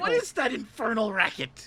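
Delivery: put-on very high, very loud eighty-year-old voice. Reacting to a noise: talking like an eighty-year-old. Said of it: "Why am I talking like I'm eighty?".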